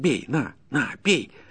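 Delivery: savage, ferocious, fierce, high-pitched voice. A peasant goads the forester who has just risen; fierce voice. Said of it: "подхватил мужик свирепым голосом".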